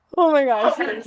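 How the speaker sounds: speaking through laughter. Reacting on being called on next: laughing while talking. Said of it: "Sorry, I'm just laughing".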